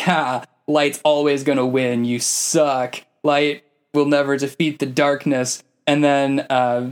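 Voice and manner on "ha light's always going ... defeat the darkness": usual speaking voice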